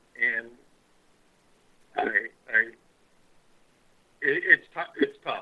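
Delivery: choked-up voice catching with emotion. Thanking everyone while leaving a job for family: choked up with emotion. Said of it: "I'm a little choked up".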